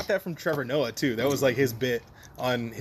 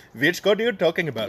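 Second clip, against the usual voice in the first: raised, put-on Indian accent; 4 semitones higher, 5 dB louder than usual. Acting out locals answering the British who came over, in an Indian accent. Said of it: "And he was doing an Indian accent?".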